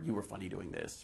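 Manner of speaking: ordinary talk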